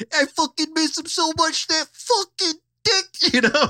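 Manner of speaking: put-on New York accent, pitched way up. Retelling how a guy talked about his dead friend, in a New York accent. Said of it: "he talked like he's from New York".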